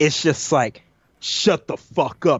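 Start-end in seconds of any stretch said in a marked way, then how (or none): 1.2-2.4 slow, devilish, scariest possible demonic voice. Retelling a deer getting in the speaker's face, imitating a demonic voice. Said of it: "in the most demonic, devilish, scariest fucking voice".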